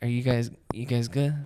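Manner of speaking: put-on, bored host voice. Imitating TJ showing up to greet everybody: imitating TJ sounding bored. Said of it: "He's just so bored".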